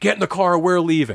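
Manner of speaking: mild half-yell, reined in. Retelling a man in a parking lot ordering her into the car: imitating someone yelling. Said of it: "He's yelling at her".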